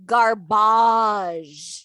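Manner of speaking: belted, thick French accent, a's stretched long. Saying the word in all caps with extra A's: loud French-accent 'garbage'. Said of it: "all caps with a few extra A's after the B and a French accent".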